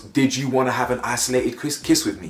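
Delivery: plain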